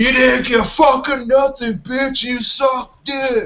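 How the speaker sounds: mock very high, brawling meathead scream. Telling about a guy behind him at a Browns game, imitating a meathead screaming. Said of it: "would scream in the most fucking meathead voice possible".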